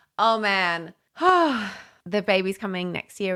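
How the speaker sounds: worn-out sighing.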